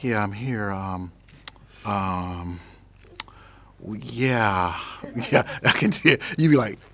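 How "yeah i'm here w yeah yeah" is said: put-on dull bored voice, very slow, long um. Joking about sounding boring while answering questions: put-on boring voice. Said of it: "I can do one of those boring voices like".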